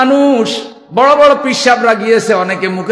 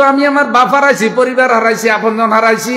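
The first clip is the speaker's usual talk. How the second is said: usual speaking voice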